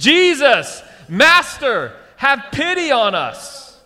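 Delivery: very slow, very high, loud, drawn-out group calling. Leading listeners in saying a verse together: saying it loudly. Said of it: "Let's all say this together loudly".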